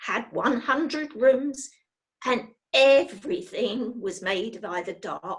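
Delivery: plain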